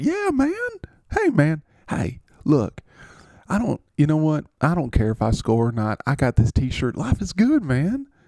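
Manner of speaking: put-on Southern accent. Acting out a skit thanking a player for a t-shirt: Calvin Ridley impression, Southern accent. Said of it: "I'm from the South".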